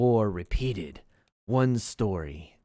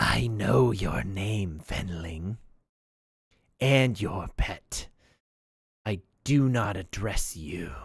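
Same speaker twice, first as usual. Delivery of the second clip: rasping, hoarse monster voice. A narrator voices a creature speaking to the player's character: raspy creature voice. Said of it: "in a raspy voice".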